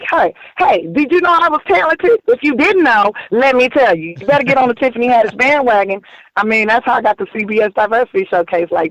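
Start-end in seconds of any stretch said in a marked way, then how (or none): 0.1-6.0 a little crazy-sounding talk, pitched up. Retelling how most jobs are won, imitating own crazy talk. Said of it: "I have to talk crazy a little bit".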